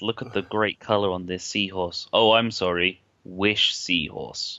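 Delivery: mock sarcastic advert presenter voice. Retelling a line from a TV advert: imitating a sarcastic advert presenter. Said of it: "the sarcastic time when he talks about".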